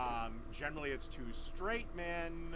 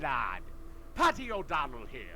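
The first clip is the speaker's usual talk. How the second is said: bad fake Irish accent; 6 dB louder than usual. Arguing about joking in accents, putting on a shitty Irish accent. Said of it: "That is a shitty Irish accent".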